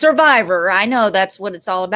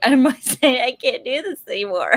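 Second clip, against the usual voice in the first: put-on tearful crying breakdown; 4 semitones higher than usual. Picturing a reality-show confessional at night, mock crying. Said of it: "it would be me crying, going".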